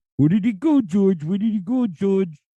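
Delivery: squawky, high cartoon vulture voice. Recalling the vulture from the Looney Tunes commercials, Looney Tunes vulture voice. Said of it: "he was all like".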